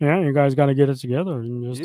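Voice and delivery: put-on flat, level monotone. Mocking Bosa's message to his teammates: flat Bosa monotone impression. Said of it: "that little fucking monotone".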